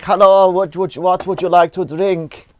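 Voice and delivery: put-on loud, high-pitched German accent. Recalling a date, speaker quotes the German girl: German accent. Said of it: "she had a very German voice".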